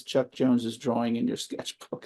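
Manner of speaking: put-on quiet voice. Retelling what she said after leaning in, in the kitchen: retelling a very quiet remark. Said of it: "she just leans in very quietly".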